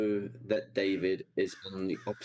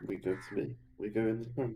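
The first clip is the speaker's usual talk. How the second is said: mumbled, unclear words running together; 2 semitones higher, 3 dB quieter than usual. Answering a question about hitting the button and leaving: mumbling. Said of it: "You're mumbling".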